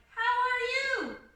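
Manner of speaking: questioning intonation on "how are you". Teaching sentence endings, demonstrating how a question sounds, asking a question. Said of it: "If they're asking a question".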